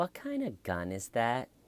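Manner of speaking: soft, sugary-sweet, lilting sing-song voice. Acting out a question to a detective who has come back in, in Jodi's little sweet voice. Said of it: "goes in her little sweet voice".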